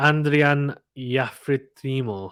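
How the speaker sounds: put-on Spanish accent. Trying to pronounce a tennis player's name, in a spanish accent. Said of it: "said it in a Spanish accent".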